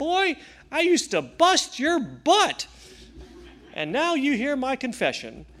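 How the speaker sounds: very high, comically pitched, swooping voice. Retelling what a big, imposing colonel said to him: funny high-pitched voice. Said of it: "he had this funny, high-pitched voice".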